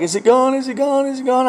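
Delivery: put-on high tearful sobbing, words said over and over. Retelling how his crying wife kept asking: imitating someone crying. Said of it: "crying her fucking eyes out".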